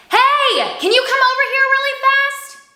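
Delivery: very high, loud, calling outside voice. Speaker demonstrating the difference between kinds of voice, loud outside voice. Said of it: "That's using my outside voice".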